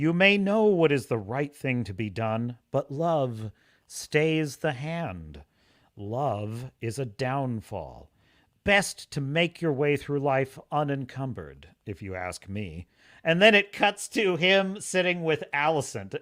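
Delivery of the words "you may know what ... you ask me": put-on quiet, musing voice. Quoting a voiceover line by Larys from season one: quiet musing Larys voice. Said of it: "it's so quiet".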